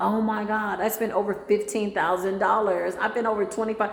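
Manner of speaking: ordinary talk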